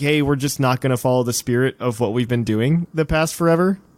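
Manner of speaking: ordinary talk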